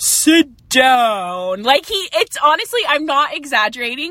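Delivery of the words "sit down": shifted tone like a guided-meditation voice. Describing guided meditations, imitating Joe Dispenza's meditation voice. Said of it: "different tones of his voice".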